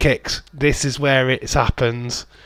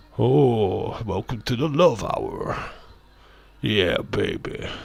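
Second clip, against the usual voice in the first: deep voice with long drawn-out "oh"; 2 semitones lower, 5 dB quieter than usual.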